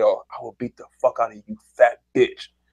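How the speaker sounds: menacing whisper, close up. Retelling a threat made while holding a kid in a chokehold: imitating a whisper. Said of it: "I whispered".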